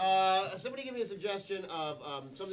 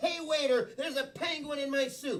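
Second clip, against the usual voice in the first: acted, fake furious outrage; 7 semitones higher than usual. Demonstrating a complaint to a waiter for others to copy, pretending to be really mad. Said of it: "I want you to pretend you're really mad".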